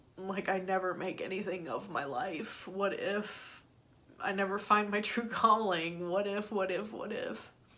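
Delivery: tearful voice, crying through the words. Speaker opening up about what they're working on, crying. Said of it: "I'm sorry I started crying".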